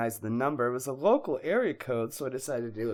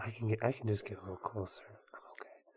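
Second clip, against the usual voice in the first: hushed, near-silent, very quiet whisper; 3 semitones lower, 11 dB quieter than usual. A guest moves closer to the microphones to be heard: whispering. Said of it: "I just have to whisper".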